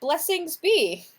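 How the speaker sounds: gleeful high-pitched voice. Speaker voicing the Kenku Flicker in another voice: gleeful Flicker voice. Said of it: "in another voice, Flicker kind of gleefully says".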